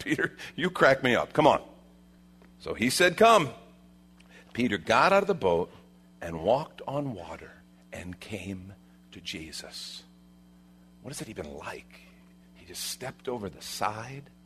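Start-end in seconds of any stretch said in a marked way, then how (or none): 0.0-1.6 chuckling while speaking. Retelling Peter offering to step onto the water, speaking as Jesus with a chuckle. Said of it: "I kind of picture that with a chuckle".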